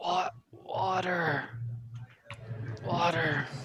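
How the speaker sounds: very quiet, faint, feeble whisper. Voicing a collapsed figure reaching out to the group: faint whisper. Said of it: "you can hear a faint whisper".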